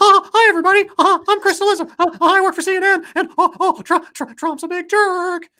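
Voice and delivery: squeaky, very high, loud and slow. Showing how you would have to sound like Chris Cillizza, do a Mickey Mouse impression. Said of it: "I'd have to do a Mickey Mouse impression".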